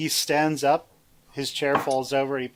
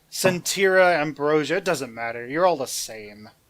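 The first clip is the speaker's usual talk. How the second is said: ordinary talk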